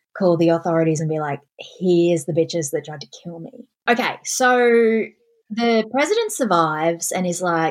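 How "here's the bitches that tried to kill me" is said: ordinary talk, nothing marked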